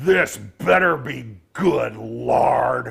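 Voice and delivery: loud, rough, razor-sharp goblin voice. Narrator voicing a goblin heard from below, in a sharp razor-wire goblin voice. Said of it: "the voice is as sharp as razor wire".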